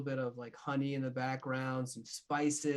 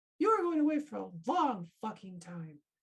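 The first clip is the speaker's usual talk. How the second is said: high, swooping, squeaky little cartoon-mouse voice; 7 semitones higher than usual. Acting out Captain looking up at him and answering, in a Mickey Mouse voice. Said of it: "he sound like Mickey Mouse?".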